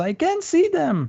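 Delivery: goblin voice shouting. Narrating as the goblin leader spots them, shouting goblin leader. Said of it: "he shouts".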